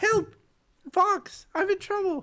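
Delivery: very high-pitched cartoon toad voice. Quoting a game character's cry for help to Fox, in the Slippy Toad voice. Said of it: "I always think of Toad".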